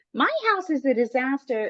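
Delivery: put-on praising, snide tone. Retelling what a roofing company lady said about the house: imitating the lady's backhanded compliment. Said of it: "the way she said it was almost like".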